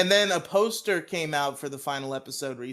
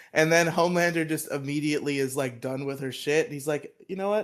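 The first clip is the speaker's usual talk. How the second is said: normal talking voice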